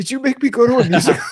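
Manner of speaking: put-on angry voice. Retelling a friend's reaction on discovering a film was a musical: imitating someone getting mad. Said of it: "He gets so mad".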